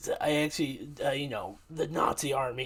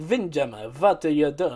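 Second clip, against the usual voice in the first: loud, barked, put-on German accent; 5 dB louder than usual. Showing how the character Overcast talks: Overcast's German accent. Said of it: "so he has this German accent".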